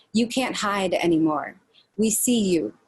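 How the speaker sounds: plain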